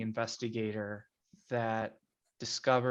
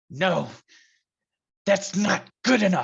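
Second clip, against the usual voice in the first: very loud, pitched-up, grief-turned-rage roar; 8 semitones higher, 11 dB louder than usual. Narrating a scene, voicing the grieving father turning on you: enraged. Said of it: "his tears change to rage".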